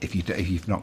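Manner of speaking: ordinary talk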